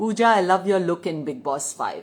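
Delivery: ordinary delivery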